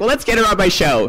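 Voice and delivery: offhand, half-joking voice. Telling how he asked friends about getting a big name on his show, retelling a joking suggestion. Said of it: "kind of jokingly".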